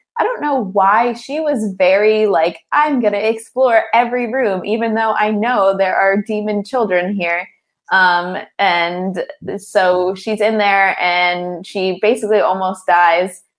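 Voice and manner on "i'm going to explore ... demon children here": ordinary talk, nothing marked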